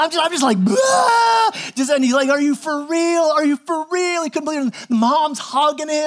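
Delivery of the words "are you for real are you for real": mock sobbing, disbelieving, slower. Speaker retells a boy told he will be adopted, imitating someone bawling. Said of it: "and he just starts bawling".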